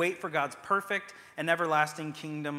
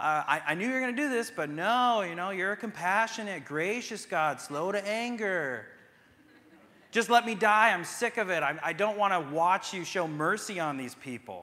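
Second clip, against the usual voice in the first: put-on super condescending, patronizing, talking-down tone; 4 semitones higher than usual. Retelling what a man says to God, super condescendingly. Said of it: "He's saying it like super condescendingly".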